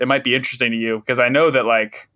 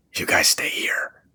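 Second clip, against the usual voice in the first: mock side-mouth whisper, quieter, much lower; 7 semitones lower, 4 dB quieter than usual. Retelling a quick aside to two others, whispering out of the side of the mouth. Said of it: "I whisper out of the side of my mouth".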